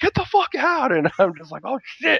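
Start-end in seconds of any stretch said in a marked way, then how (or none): 0.0-0.9 mock, very high, shrill screamed outburst. Recounting a man who slammed the door and screamed at the speaker; retelling a scream. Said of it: "looks at me and screams".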